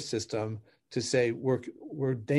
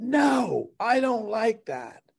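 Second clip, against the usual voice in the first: mock upset tone, very high and very slow; 10 semitones higher, 4 dB louder than usual. Showing how the wife hears the words: imitating an upset-sounding tone. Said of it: "at a totally different level than I said it".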